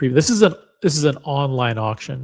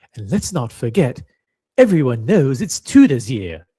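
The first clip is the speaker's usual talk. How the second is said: put-on British accent. Giving shout-outs to the Florida crew, the speaker switches to a put-on British accent. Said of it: "I have to do this in British accent".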